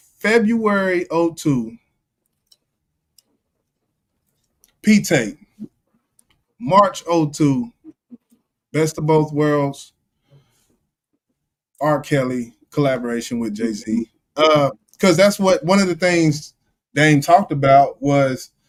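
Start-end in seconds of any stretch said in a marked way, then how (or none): 0.2-14.1 very slow, deliberate, spelled out letter by letter. Laying out a timeline of release dates, the speaker says it real slow. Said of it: "I just want to say this real slow".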